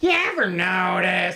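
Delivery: put-on cartoon character voice. Joking about a segment, doing a Beavis voice: Beavis voice. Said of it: "I'm doing a Beavis voice here".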